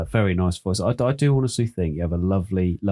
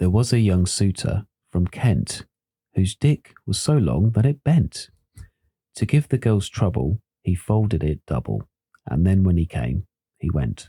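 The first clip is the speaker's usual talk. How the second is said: pleasant, nice read-aloud storytelling voice. Taking a turn to read a limerick aloud, in a nice storytelling reading voice. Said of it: "See if I can get a nice, nice reading voice on here".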